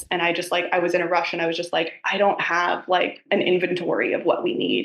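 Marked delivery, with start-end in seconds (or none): 2.0-4.9 put-on critical, judging tone. Retelling own rushed reply to his request: imitating own judgy tone. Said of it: "judgy, critical".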